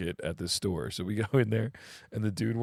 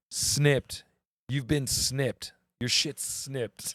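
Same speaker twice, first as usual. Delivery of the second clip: slow, pitched-up goofy cashier voice; 5 semitones higher than usual. Retelling the cashier snipping the flip-flops: imitating a ridiculous cashier. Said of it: "and he's like".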